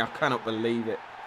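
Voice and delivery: low, soft, stunned disbelief.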